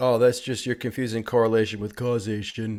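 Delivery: deliberately stupid, mocking voice. Mimicking a dismissive remark mentioned earlier, on purpose in a stupid mocking voice. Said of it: "I'm using stupid voice on purpose".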